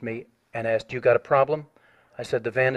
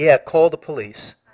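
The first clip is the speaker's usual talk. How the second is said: put-on loud jeering, taunting, mocking shout; 3 semitones higher, 5 dB louder than usual. Retelling an attacker yelling at passersby: imitating a mocking yell. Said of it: "The guy yelled to them mockingly".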